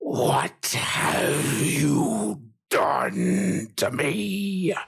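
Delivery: rough, swooping, rasping, furious dragon voice. A game narrator voices the dragon confronting the players, in a deep, angry voice. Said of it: "with a deep, angry voice".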